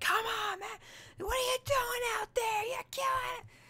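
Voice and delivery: put-on very high, shrill screaming. Retelling a drunk father at his kid's games, imitating him screaming at his kid. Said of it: "he'd just be screaming like".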